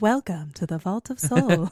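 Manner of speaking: futuristic sci-fi robotic computer assistant voice. Picturing a book's dragon robot greeting visitors; Siri-like futuristic voice. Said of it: "like Siri voice".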